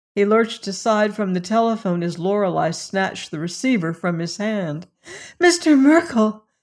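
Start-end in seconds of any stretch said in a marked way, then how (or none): 5.4-6.4 loud, high, urgent crying out. Lorelei snatches the telephone receiver and calls to the man on the line; crying out. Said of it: "she cried".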